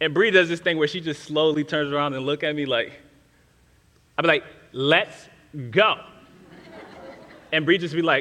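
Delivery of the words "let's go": put-on intense, urgent tone, pitched lower. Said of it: "I say things a little bit more intensely".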